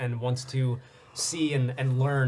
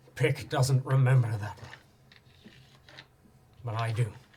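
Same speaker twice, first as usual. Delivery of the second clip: grave, mournful, somber, heavy tone. Voicing a character who speaks from a reflection to a player, somber tone. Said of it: "almost like a somber tone in his voice".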